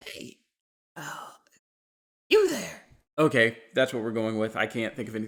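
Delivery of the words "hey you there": put-on elderly woman voice. Reading a game character's line, trying out an old lady voice. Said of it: "How do I do an old la-".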